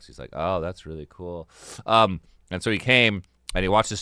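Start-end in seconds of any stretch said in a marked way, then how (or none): 0.3-1.5 put-on deadpan, flat, level monotone, no lift. Retelling a brother's reply to opening-act news: imitating Eric's flat voice. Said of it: "really flat when he talks".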